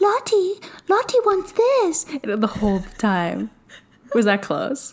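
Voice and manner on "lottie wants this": very high, airy, breathy little creature voice. Describing a voice that sounded like Gollum, imitating it breathy and high. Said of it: "so breathy and high".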